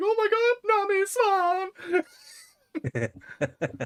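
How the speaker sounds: very high, drawn-out, squealing excited freak-out. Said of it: "doesn't freak out ... Like".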